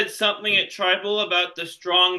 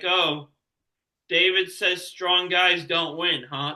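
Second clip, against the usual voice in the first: ordinary delivery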